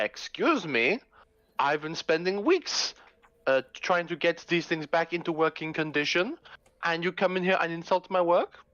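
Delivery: put-on complaining tone spoken in a Russian accent. Speaker voicing the character Felix to the group, in a Russian accent. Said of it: "Russian, Russian".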